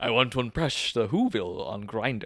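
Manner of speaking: put-on sassy character voice. Playing the Grinch on request, Jim Carrey's Grinch voice. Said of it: "that's pretty good".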